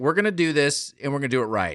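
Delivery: ordinary talk, nothing marked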